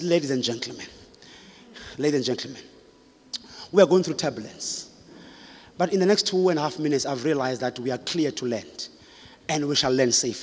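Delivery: steady, calm, soft, reassuring pilot voice. Retelling a pilot's announcement during turbulence: imitating a pilot's calm voice. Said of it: "the pilot with a calm voice".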